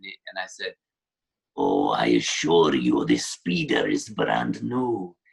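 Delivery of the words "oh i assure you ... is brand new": put-on slow old Russian voice. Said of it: "slow, uh, like, old Russian kind of car salesman guy".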